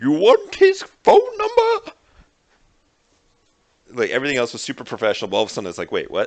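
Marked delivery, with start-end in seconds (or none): 0.0-1.9 distorted, very high, very loud, drawn-out voice. Recounting what was heard, doing a distorted Bane voice. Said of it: "distorted Bane voice of like".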